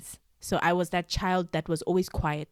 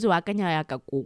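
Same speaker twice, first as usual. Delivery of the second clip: plain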